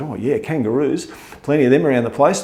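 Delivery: ordinary delivery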